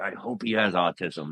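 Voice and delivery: mock mutter under breath. Recalling when his wife was pregnant with his son, retelling a muttered aside. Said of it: "secretly under my breath".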